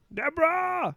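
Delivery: put-on nasal New York voice. Doing a Ray Romano impression to wrap up the segment. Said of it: "That's my Ray Romano".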